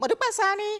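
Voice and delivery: tiny, very high-pitched little voice. Giving a birthday shout-out, imitating Modupe Sani's tiny voice. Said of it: "let me try to sound like her".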